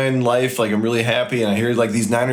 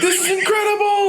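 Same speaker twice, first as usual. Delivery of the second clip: mock very high, stoked, excited yell. Describing a stoked beginner skier on the slope, the speaker imitates him yelling. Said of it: "puts his hands up in the air and yells like".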